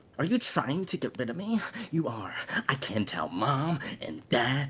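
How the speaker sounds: breath-heavy, lifted delivery. Acting an argument scene with another character, breathy voice. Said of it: "It got really got really breathy there".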